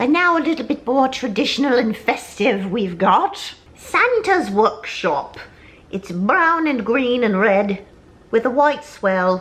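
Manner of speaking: goofy, silly, high-pitched made-up elf voice. Presenting a christmas candle to viewers: silly elf voice. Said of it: "I don't know why I'm doing that stupid voice".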